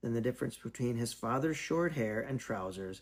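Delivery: ordinary delivery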